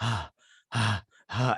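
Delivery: put-on old man voice, groaning and strained. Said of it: "hobbling along".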